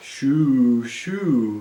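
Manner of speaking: drowsy, shoo stretched long. Narrator reading a story, a voice overhead answering a girl's shout, sleepy voice. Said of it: "said a sleepy voice somewhere above her".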